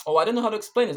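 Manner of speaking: high flustered voice. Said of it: "I'm trying to explain something".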